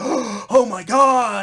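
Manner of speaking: stunned, awestruck, high and loud shocked outburst. Retelling a game trailer shot of Sonic: imitating Sonic in awe and shock. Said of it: "Sonic looking in awe and in shock".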